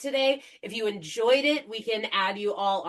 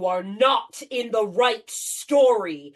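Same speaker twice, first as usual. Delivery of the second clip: loud, resounding, booming voice; 5 dB louder than usual. A storyteller tells the listeners of a voice in their heads, booming voice. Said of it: "you all hear a booming voice in your head".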